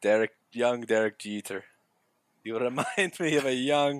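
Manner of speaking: put-on thick French accent. Acting out a speech before the World Series game against the Padres: Joe Torre with thick French accent. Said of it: "now he's Irish".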